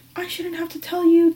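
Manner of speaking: put-on yelling woman. Recounting her yelling at the speaker over the carpet, retelling her yelling. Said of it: "yelling at the top of her fucking lungs".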